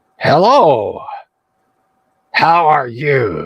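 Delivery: slow, yappy, yipping bark-like creature voice. Voicing a club-carrying creature greeting the party: yipping and barking voice. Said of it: "yipping and barking kind of voice".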